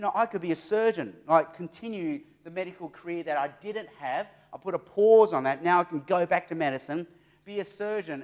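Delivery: ordinary delivery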